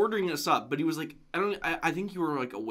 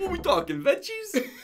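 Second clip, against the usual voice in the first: put-on Italian accent, pitched very high; 13 semitones higher than usual. Quoting Rick asking about veggies, in Rick's Italian accent. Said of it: "he says it in that like accent".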